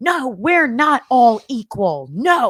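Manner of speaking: put-on very slow, loud, drawn-out drunken shouting. Retelling a woman shouting over a man at an event, imitating a drunk woman yelling. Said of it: "And she's yelling".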